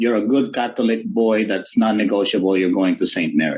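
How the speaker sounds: put-on Filipino accent, rattled off quickly. Speaker quotes his mother telling him which organization to choose: filipino accent. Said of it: "in her Filipino accent".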